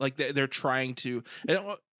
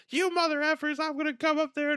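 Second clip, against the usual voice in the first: mock scream, much higher; 14 semitones higher than usual. Describing a film's water balloon scene, imitating a scream. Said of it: "he just like screams like".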